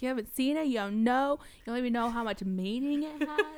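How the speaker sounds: mock fired-up, loud, heated shouting outburst. Recounting an argument, acting out what she said back then: retelling her own yell. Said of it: "I'm yelling".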